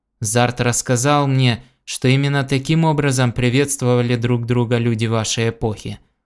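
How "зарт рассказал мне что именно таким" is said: usual speaking voice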